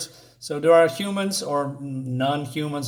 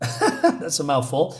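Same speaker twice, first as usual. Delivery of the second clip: ordinary delivery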